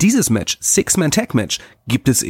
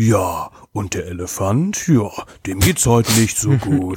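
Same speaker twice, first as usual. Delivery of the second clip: slow wildlife documentary narrator voice; 2 semitones lower than usual. A speaker describes animal documentaries they like to watch: nature documentary narrator voice. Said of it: "Da hast du mal so eine Erzählerstimme".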